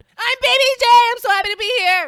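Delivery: very high, very loud screaming. Playing a quiz show contestant giving a name: screaming. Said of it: "don't scream into my ear".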